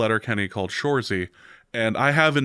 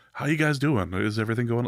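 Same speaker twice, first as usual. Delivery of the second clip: acted, grave, somber, caring and concerned tone. Retelling a celebrity's question to them, mimicking a somber tone. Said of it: "in a very somber, not in his character voice".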